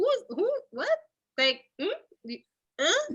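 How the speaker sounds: high, baffled, bewildered voice.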